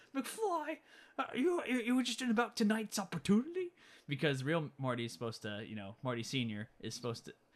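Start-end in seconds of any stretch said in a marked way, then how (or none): 0.1-3.7 bizarre, super weird, very high-pitched delivery. Retelling a scene where Marty Jr. speaks, super weird Marty Jr. voice. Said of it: "he has like that super weird voice".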